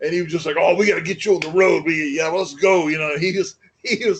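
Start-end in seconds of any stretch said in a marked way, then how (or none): 0.6-2.9 imitated wild, excited voice. Retelling a first meeting with Ox, who went nuts: imitating Ox going nuts. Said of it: "I can't do it any justice".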